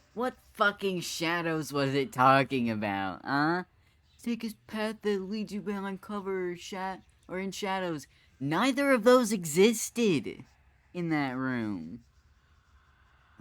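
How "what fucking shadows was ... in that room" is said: much higher, louder, furious heated rant. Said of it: "I'm getting heated already".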